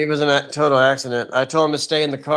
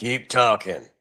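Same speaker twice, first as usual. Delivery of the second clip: very stern movie-star delivery; 4 semitones lower, 4 dB quieter than usual. Retelling a phone call, quoting the man's reply: imitating his stern movie voice. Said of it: "he talks just like in the movies".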